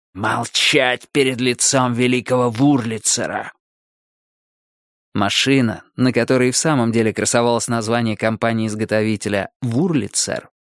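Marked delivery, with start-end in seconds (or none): 0.2-3.6 words hissed out sharply. A guard shaking Jill after she mutters: hissing. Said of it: "прошипел".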